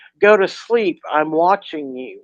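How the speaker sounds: usual speaking voice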